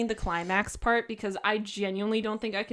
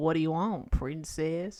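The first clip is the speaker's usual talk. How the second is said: low southern American twang; 5 semitones lower than usual. Showing off accents, speaker repeats the line in a southern twang. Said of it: "I can do it in a southern twang".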